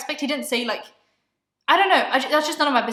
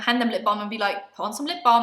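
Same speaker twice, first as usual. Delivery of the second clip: normal talking voice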